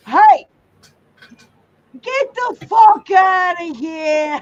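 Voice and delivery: put-on booming, loud, high Boston-accent holler. Retelling what Boston Brian says when he comes in, imitating Boston Brian's accent. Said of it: "he's got his Boston accent".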